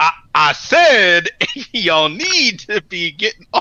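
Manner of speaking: forced tough-guy voice, slow, would-be menacing. Retelling a movie scene where a dad retries his warning: imitating a dad trying to sound threatening. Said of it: ""I don't sound threatening enough,"".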